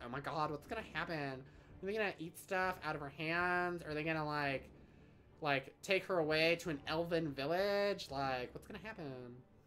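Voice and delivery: put-on gushing nineties girl voice. Retelling own reaction to watching deer feeding: nineties girl voice. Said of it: "That was my nineties girl voice".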